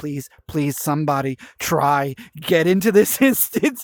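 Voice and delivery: put-on, earnest begging plea, over and over. Retelling how they begged friends to join the instance, imitating own begging. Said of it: "so I'm begging everyone to get in".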